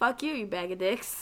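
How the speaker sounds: put-on Boston-accented speech. Retelling the answer to coworkers who said the speaker sounded like Boston, in a Boston accent. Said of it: "and they're like, see?".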